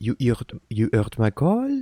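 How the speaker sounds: put-on sing-song French accent. Voicing a character for the first time, trying out a French accent. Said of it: "giving someone a French accent".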